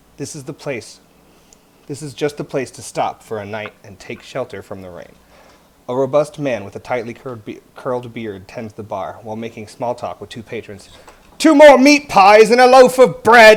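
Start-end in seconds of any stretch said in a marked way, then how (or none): 11.4-13.6 very loud, high, shrill shout. Narrator reads the barkeeper calling through the door behind the bar: shouting. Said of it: "he shouts".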